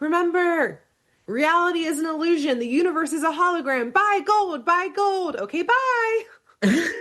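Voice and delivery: very high, loud, ringing, echoing voice. Retelling a scene where Bill floats into the sky, Bill's echoing voice. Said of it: "as he says in like an echoing voice".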